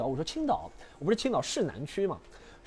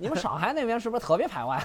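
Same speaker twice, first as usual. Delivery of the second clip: put-on chatty voice with Shandong dialect accent; 6 semitones higher than usual. Retelling a taxi ride, the speaker quotes the driver: imitating a Shandong accent. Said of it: "我山山东话".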